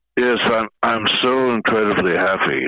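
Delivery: deadpan, unenthusiastic. Asked by an interviewer if pleased, answering in a sarcastic flat tone. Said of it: "As you can tell by the tone of my voice".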